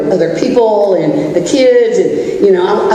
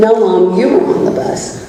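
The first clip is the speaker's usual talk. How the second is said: ordinary delivery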